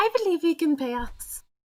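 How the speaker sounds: put-on high-pitched, clumsy, butchered French accent. Voicing the character Maya after narrating her: bad French accent as Maya. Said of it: "I'm using a character voice for her, so excuse what I'm about to do, butchering the French accent".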